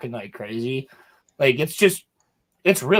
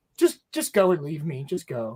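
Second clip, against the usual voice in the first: put-on defeated, resigned voice, slower; 4 dB quieter than usual. Retelling a friend's words during a game, imitating him sounding defeated. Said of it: "And he sounded so defeated".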